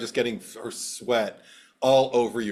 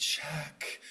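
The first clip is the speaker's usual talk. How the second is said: sexy voice, hushed, breathy and sultry whisper; 4 semitones higher, 11 dB quieter than usual. Retelling a film scene where a character says a line: imitating a sexy voice. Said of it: "she said it in a sexy voice".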